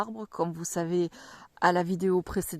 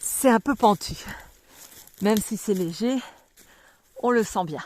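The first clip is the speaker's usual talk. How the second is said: winded, short of breath, raised voice; 4 semitones higher, 5 dB louder than usual. Walking up a slight slope while showing the trees, out of breath. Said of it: "si je suis essoufflée, excusez-moi".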